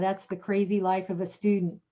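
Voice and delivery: ordinary talk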